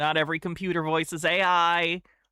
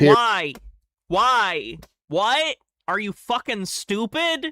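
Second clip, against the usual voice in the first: angry, loud outburst, mounting and rising; 4 semitones higher, 5 dB louder than usual. In a heated discussion about whether Satan exists, angry. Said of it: "I'm just getting mad".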